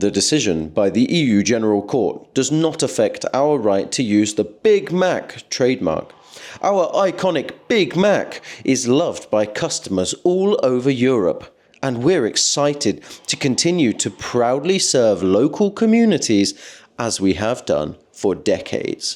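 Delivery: ordinary delivery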